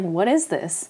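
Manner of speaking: normal talking voice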